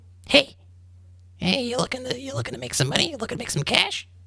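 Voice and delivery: soft, small little voice. To a character eager to gamble, speaking as a little voice on his shoulder. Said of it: "you hear this little voice in your right ear".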